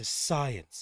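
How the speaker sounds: hushed, secretive whisper under the breath. A character checks that no one else is in the shop, whispering. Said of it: "says that in like a whisper, hushed voice".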